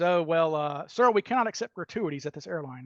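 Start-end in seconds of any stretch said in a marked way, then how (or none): none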